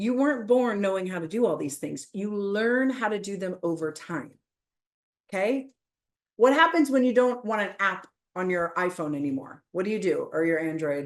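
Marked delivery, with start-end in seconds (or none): 10.3-11.1 playfully judgmental mock tone, lower. Asking the audience a question, in a mock judgmental tone. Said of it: "can you hear the judgment, the Android judgment".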